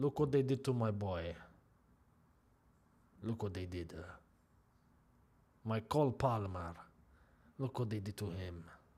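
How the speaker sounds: really bad mobster voice, deep, hushed, murmuring. Reacting while watching a football match, in a really bad Godfather voice. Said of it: "That's my really bad Godfather voice".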